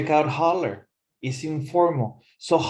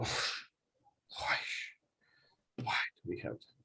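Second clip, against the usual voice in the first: hushed, slow, whispered complaining mutter under the breath; 11 semitones lower, 17 dB quieter than usual. Teaching the word mutter with a complaining example: quiet complaining mutter. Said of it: "to speak in a quiet voice, especially when you're complaining. ... That would be mutter".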